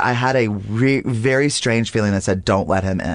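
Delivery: ordinary talk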